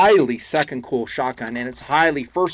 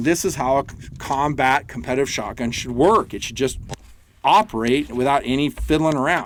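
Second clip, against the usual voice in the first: ordinary delivery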